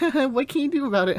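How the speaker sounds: giggling happily. Retelling a character telling his mom about a school event: happy and giggly. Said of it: "all really happy and, and giggly".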